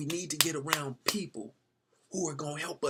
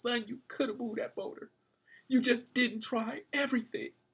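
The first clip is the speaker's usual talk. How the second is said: imitated tearful speech, higher; 8 semitones higher than usual. Retelling a father with tears on his face speaking to his son: acting out a tearful father. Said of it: "as he has tears just coming down his face".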